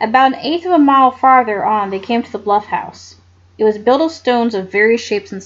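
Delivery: plain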